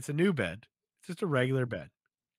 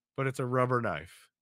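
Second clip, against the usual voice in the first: usual speaking voice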